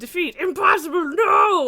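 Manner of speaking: very loud, high-pitched villain outcry. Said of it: "Vector yelling, no!".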